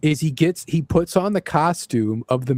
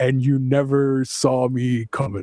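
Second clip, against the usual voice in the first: put-on villain voice; 3 semitones lower than usual. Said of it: "looks at the camera and goes".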